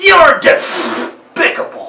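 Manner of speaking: very high, loud, shrill, blaring cartoon duck voice. Showing how an impression is broken down: Daffy Duck voice. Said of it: "if you were to do Daffy Duck".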